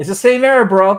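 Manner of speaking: very loud, high-pitched, full-on yell. Reacting to seeing the same error again after a fix: yelling. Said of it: "I don't know why I'm yelling".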